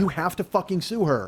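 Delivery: plain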